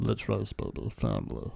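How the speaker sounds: creepy, breathy near-whisper, soft. Trying out the same impression another speaker just did: creepy Vin Diesel impression. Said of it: "It's creepy".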